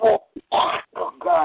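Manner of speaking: nauseous retching. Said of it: "I'm about to puke".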